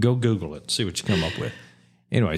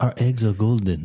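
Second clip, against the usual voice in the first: terrible put-on French accent. Speaker voices the French hens offering their eggs, terrible French accent. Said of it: "I have a terrible French accent".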